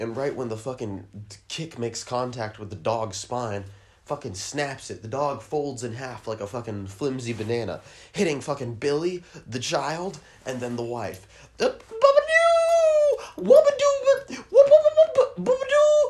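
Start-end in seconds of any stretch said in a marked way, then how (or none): 11.6-16.1 very high-pitched, squeaky, silly nonsense noises. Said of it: "making all kinds of silly noises".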